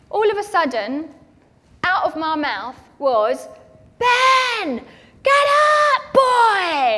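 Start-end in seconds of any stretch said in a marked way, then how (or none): 3.9-7.0 put-on shrill, high, loud slow yell, "boy" stretched long. Retelling shouting at a three-year-old son on sports day: retelling a shout. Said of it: "I've just shouted at my three-year-old".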